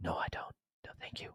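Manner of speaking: quiet whispered voice.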